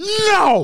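imitated yelling. Retelling telling a dog off: retelling a yell at a dog. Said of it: "Like this".

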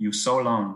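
put-on Thai accent. Retelling what she said to him once they got up there, in her Thai accent. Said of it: "she said to me in her Thai accent".

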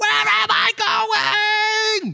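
mock, very high, shrill, very drawn-out scream. A parent retells their son at practice while the coach is busy, retelling a scream. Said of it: "literally screaming".

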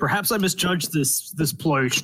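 muffled voice talking with a mouth full of food. Playing a character in a tavern, speaking with a mouth full of food. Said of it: "with a mouthful of food".

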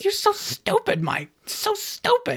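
very high squeal with a scolding tone. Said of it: "Mike would talk to himself".

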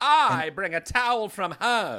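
put-on swooping old Hollywood starlet voice, very high, loud. Speaker repeats a line as a 1920s Hollywood starlet impression. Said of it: "my impression of a Hollywood starlet from the 1920s".

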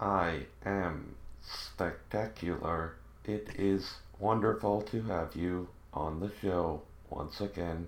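robotic talking voice. A podcast co-host answers the host's greeting on the show in a robot voice. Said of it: "a robot in my house that talked like that".

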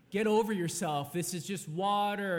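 mock-dismissive, put-on taunting tone. Retelling talking back to an old man yelling about the ice, retelling a mocking retort. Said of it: "and you're just mocking him".

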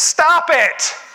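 shrill, very high, loud shouting. Retelling a story about a five-minute office visit: imitating someone yelling. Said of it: "He just yells".

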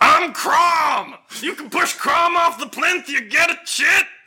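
very high, slow, drawn-out woman's yell. Voicing a half-orc woman at a strength test: half-orc woman yelling. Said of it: "and she yells".

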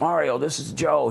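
raspy, rough voice, a bit high. Retelling the phone call when Joe called back: Joe's raspy voice. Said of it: "his voice is kind of a raspy voice".

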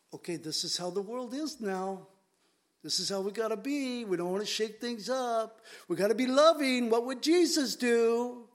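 play-acted, sarcastic, mocking, approving parody voice. Imitating professing Christians who nod in approval, mocking professing Christians. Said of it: "I'm mocking because it's a mockery".

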